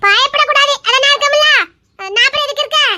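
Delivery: aggressive harsh tone. In a drama scene, answering someone who says they are scared: fierce, biting tone. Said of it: "கடிச்சு திங்கிற மாதிரியே பேசுறாளே".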